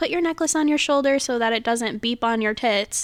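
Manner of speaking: plain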